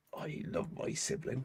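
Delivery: muttered under the breath. A player voices their character Hildefond during a game, muttering under breath. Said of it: "just mutters under their breath".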